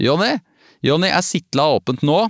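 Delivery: high, shouted call. Narrator reading a woman sticking her head out the door to call, shouted. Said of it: "stakk inn hodet og ropte".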